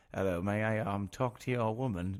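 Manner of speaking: put-on old-fashioned English accent. Retelling how someone answered a question, doing his line in an old English accent. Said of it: "doing this voice of like like an English, like old English".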